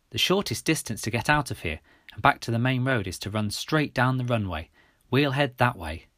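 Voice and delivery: ordinary delivery, nothing marked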